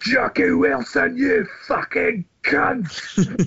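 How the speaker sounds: very high, very slow, stretched-out broad Glaswegian call. Retelling a stranger's shout heard in the street in Glasgow, imitating a Glasgow accent shout. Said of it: "we just hear this voice go".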